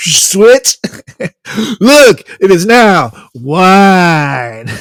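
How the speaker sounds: put-on stoner voice. Joking about how Jesus would talk as a laid-back stoner: Jesus as a stoner. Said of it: "He looks like a hacky sack kicking stoner".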